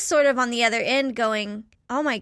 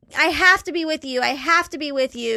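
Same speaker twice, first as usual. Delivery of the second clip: put-on tearful crying voice, higher; 3 semitones higher, 3 dB louder than usual. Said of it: "is crying".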